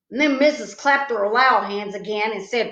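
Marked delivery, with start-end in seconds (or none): none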